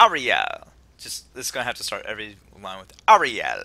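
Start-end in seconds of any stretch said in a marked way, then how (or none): 0.0-0.7 loud Jamaican-accented call. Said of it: "that's how I can do my Jamaican accent".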